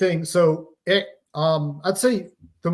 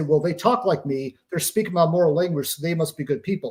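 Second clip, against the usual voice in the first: ordinary talk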